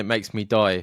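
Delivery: ordinary talk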